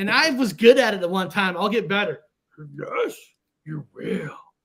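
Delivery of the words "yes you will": put-on throaty old alien voice pushed up from the throat. Speaker practicing to get a voice back, Yoda voice. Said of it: "It takes a little bit from your throat".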